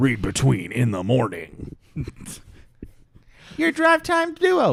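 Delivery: loud, swooping shock jock radio DJ voice. On their podcast, a host announces the show in a shock jock radio voice. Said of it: "my stupid shock jock radio voice".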